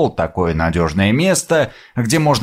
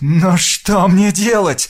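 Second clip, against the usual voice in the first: shaky, trembling, quavering bleating voice; 6 semitones higher than usual. Narrator reads a character asking the man in the armchair a question, trembling, bleating voice. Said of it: "дрожащим голосом спросил, проблеял".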